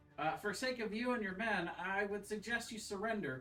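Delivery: calling out across distance. Playing a character yelling a warning toward an enemy: yelling out in character. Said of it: "I'm gonna yell out towards him".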